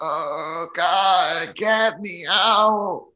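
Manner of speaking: hoarse, raspy groan. Game narrator voices someone calling from the bottom of a dark well, in a raspy voice. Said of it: "you hear a raspy voice say".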